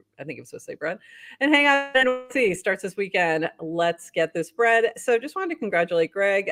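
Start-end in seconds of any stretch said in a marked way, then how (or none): none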